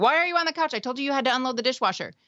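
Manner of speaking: high, angry, fed-up scolding yell. Showing an example of what not to say to a family member: acting out screaming at someone. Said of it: "instead of screaming".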